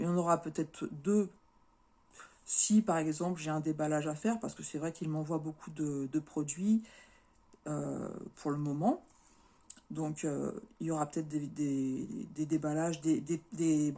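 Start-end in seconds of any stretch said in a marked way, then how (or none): 11.3-13.9 slow stammering, stumbling repetition of the same word. Explaining to viewers what videos are coming, stumbling over words. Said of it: "je bafouille".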